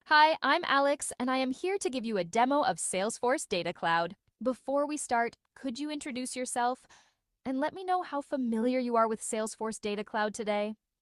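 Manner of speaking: put-on valley girl voice. Greeting someone and offering a demo: Valley Girl take. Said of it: "a Valley Girl take".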